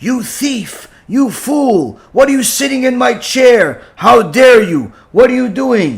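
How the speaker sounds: enraged, furious rant. Retelling a man screaming insults at an old man in his chair: retelling a furious yell. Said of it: "he's yelling at him at the top of his lungs".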